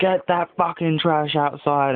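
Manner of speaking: loud shouting, high-pitched. Retelling being woken by dad: imitating dad shouting. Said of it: "my dad's shouting at me".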